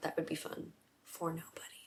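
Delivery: talking quietly in a soft, hushed whisper.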